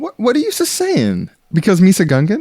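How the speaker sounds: swooping, animated sidekick voice with pitch swinging all over. Acting a skit as a character addressed as Jar Jar: Jar Jar Binks voice. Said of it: "Okay, Jar Jar".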